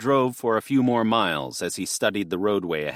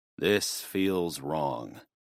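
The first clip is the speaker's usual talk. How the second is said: slow mechanical delivery, lower and quieter; 4 semitones lower, 5 dB quieter than usual. Reading a character who senses something wrong ahead: slow and mechanical. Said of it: "he said slow and mechanically".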